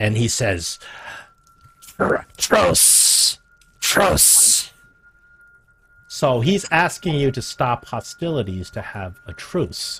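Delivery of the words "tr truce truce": sputtering, creaky, choked, rough and halting speech. Voicing a sea creature popping up and asking for a truce: choking, struggling to speak. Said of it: "he starts choking".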